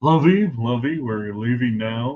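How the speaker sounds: put-on, squishy country club accent. Showing what a squishy Republican country club accent sounds like: Thurston Howell voice. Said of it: "I'm pretty much doing Thurston Howell".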